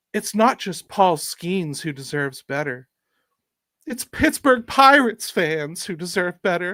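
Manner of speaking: put-on smug, self-satisfied pundit tone. Reading a couple of Jeff Passan quotes aloud: smug Jeff Passan voice. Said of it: "I'll probably read it in the smug voice".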